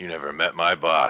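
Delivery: sour, put-upon, grumpy grumbling. Voicing an innkeeper as a player walks off: grumbling. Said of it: "he just kinda grumbles and says".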